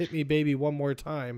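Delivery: plain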